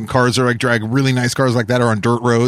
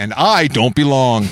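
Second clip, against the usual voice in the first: very slow, drawn-out news anchor voiceover. Dubbing a joke line over the 60 Minutes anchor: dubbing over the anchor's voice. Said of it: "dub over his voice".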